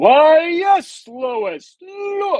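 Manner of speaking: big dramatic voice, very high and slow. Describing a show's ordinary citizens all talking in a big dramatic Superman voice. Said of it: "talking in that big dramatic Superman voice".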